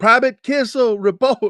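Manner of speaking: very high, loud shouted yell from several voices. Retelling everybody repeating the drill sergeant's call: imitating everybody yelling. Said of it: "I heard everybody yell".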